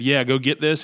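normal talking voice

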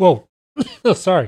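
coughing through the words.

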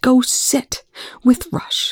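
slow, hissed-out whisper. Eli answers Young's question: hissed. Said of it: "Eli hissed".

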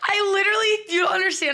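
high, loud, near-sobbing voice close to tears.

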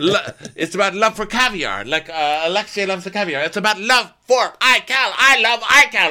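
mock gushing voice, high-pitched and fast.

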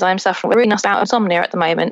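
fast, rapid, rattled-off talk.

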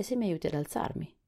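ordinary delivery

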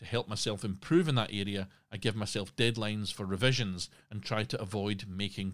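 ordinary delivery

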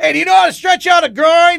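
put-on play-acted old man yelling, hollering, very high pitched. Retelling what an old man on a plane asked: imitating an old man yelling. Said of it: "He's yelling at me".

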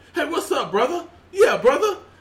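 forced put-on buddy slang, pitched way up, loud. Talking about people who fake their dialect, the speaker mocks one: fake forced slang greeting. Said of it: "you don't talk like that".

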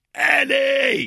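very high, shrill, stretched-out scream. Retelling screaming at a man for five minutes straight, retelling a scream. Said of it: "I was screaming this at Eddie Hobbs".

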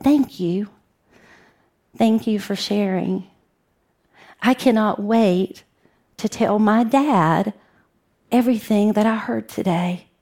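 mock soft, quiet voice. Retelling what a lady said after his talk to teachers, imitating her quiet voice. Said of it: "She had tears in her eyes, and she quietly said".

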